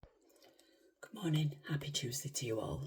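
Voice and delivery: soft, light, slight whisper. Speaker greets listeners in the morning while everybody's still asleep: soft whisper. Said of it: "Sorry that I'm whispering a little bit".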